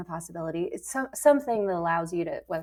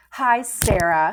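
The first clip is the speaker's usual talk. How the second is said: put-on sarcastic reading tone; 2 semitones higher, 8 dB louder than usual. Recalling reading an email aloud to her husband, retelling a sarcastic reading. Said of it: "you added that sarcastic".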